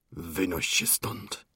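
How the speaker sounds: muffled, hushed, menacing whisper. Narrator reads a man's line to a woman during a quarrel, quiet, muffled voice. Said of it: "wyrzekł cichym, przytłumionym głosem".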